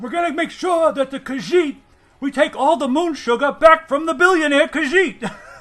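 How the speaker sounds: very loud, shrill, high, belted-out voice. Imitating a High Elf version of a politician: Bernie Sanders impression. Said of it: "you do a good Bernie impression".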